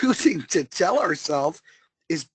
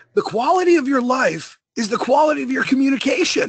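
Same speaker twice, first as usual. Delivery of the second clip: raspy put-on voice, pitched higher; 7 semitones higher, 4 dB louder than usual. Quoting a speaker after being asked for his best impression: raspy Tony Robbins voice. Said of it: "let me hear your best Tony Robbins".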